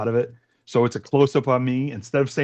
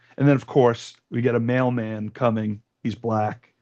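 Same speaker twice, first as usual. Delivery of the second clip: ordinary talk, nothing marked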